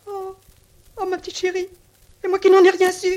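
tearful sobbing, very high-pitched. In a drama scene, a woman speaks before sending Élise to phone her husband, crying. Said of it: "Comment, vous pleurez?".

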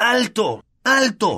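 shouting at a very high pitch. Ron, wand out in a plunging car, banging the dashboard, shouting. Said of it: "gritó".

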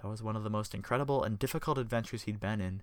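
plain reading voice

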